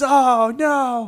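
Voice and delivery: high, loud, freaked-out panicked cry. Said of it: "he freaks out and he goes".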